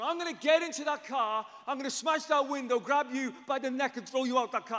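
play-acted savage, wild, enraged yelling, loud and high. Speaker retells what a man shouted at them in the car, like a wild animal. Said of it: "going absolutely like a wild animal".

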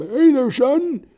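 put-on very high, very loud, booming old man voice. Describing a mentor from sobriety meetings, imitating the Colonel. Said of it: "That's how he sounds".

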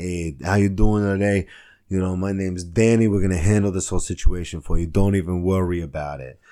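put-on loud, heavy, full-on Italian accent, laid on thick. Retelling what a man said on showing up at the speaker's house: Danny's super Italian accent. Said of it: "like super Italian".

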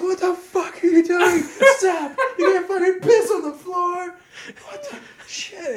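very high-pitched, shrill, loud yelling. Speaker retells what she yelled at him for peeing on the floor, retelling a yell. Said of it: "she's yelling. She's like".

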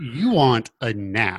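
mock condescending tone. Retelling a boss offering an employee a nap, mock-condescending. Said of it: "It's like super condescending".

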